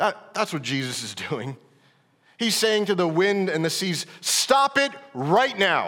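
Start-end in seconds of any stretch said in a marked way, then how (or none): 4.2-5.9 mock firm, slow, stern, no-nonsense delivery. Retelling the Gospel story, the speaker voices Jesus rebuking the wind and seas, acting out a firm rebuke. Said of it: "That's what his rebuke is".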